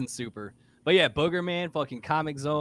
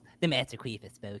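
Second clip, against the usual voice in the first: put-on bratty cartoon kid voice; 3 semitones lower, 4 dB quieter than usual. Repeating what Stan just said, in the Cartman voice. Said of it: "I picture that with the Cartman voice".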